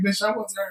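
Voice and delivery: put-on, said through a laugh. Retelling a reply to people who thought you were hurt: imitating own laughing reply. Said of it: "I'm sitting there laughing like".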